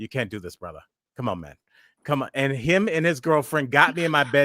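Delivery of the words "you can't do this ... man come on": coaxing tone in a put-on South African accent. Retelling how a stranger got them off the floor: imitating a South African accent. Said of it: "He had kind of a South African accent".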